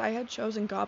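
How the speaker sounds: normal talking voice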